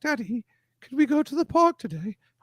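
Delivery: put-on very high, eerie little child voice with British accent. The speaker imagines having british kids who would scare him: creepy british kid voice. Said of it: "wanted British kids, like so they would scare me".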